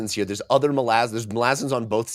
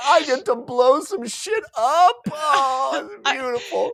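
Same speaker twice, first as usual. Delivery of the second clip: play-acted weepy joyful wail, very high and slow. Retelling how a soldier reacts to new bombs: imitating someone crying with joy. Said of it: "this dude starts crying".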